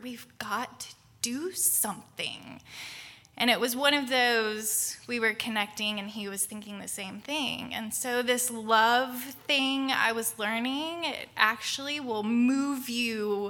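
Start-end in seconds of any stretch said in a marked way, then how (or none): 0.0-2.6 hushed, breathy whisper. Retelling leaning over to a husband at a conference: retelling a whisper. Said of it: "and just whisper".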